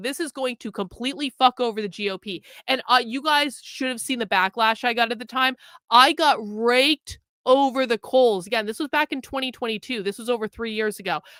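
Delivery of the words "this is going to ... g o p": imitated, put-on aggressive tone of voice. Retelling a past warning about the midterms: imitating own aggressive tone. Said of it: "I said it really aggressively".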